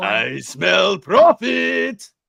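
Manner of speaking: very high, loud, rough character voice. Answering a request for a Hondo line: Hondo impression. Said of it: "we need your, uh, Hondo, I smell profit".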